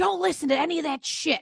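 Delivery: loud shouting. Retelling calling out to the son across practice: imitating own past yelling. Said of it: "And this is me yelling".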